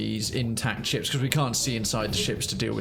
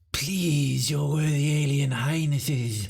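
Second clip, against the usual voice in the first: in-character slug-like alien creature voice; 4 semitones higher than usual. Playing a game, the speaker voices a hailing slug passenger ship in an alien voice. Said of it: "before I do the voice for this".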